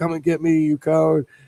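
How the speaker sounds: all-out high, loud shout. Retelling a Cuban coworker's impression, imitating Maduro shouting. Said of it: "he was shouting this shit in Spanish".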